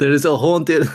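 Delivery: clumsy, botched put-on Scottish accent, loud and high. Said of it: "I can't even do it".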